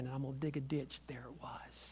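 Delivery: soft, voiceless whisper under the breath.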